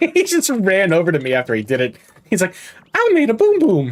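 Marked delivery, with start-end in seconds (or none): 2.9-3.9 bad, very high, loud little monster voice. Voicing the pet after it pooped and ran over, bad Agumon impression. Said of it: "That was a terrible, terrible Agumon impression".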